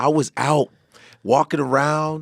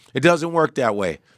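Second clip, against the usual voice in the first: normal talking voice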